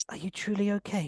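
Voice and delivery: whispering. Showing how he sends messages to her while she sleeps, whispering. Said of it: "I just whisper".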